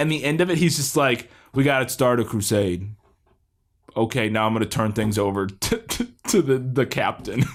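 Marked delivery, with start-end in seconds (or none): 1.5-7.4 low, completely flat, droning monotone. Quoting a man's supposed impassioned plea to the police department: flat monotone delivery. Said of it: "it's all completely monotone".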